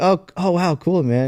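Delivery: fake, forced polite interest. Retelling own reply to a rambling stranger: retelling own polite fake interest. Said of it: "trying to be nice".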